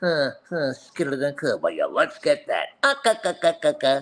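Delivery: swooping, bouncy, hammed-up cartoon sailor voice. Telling how he ended up getting roles, the speaker does a Popeye voice. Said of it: "cocking his neck back like".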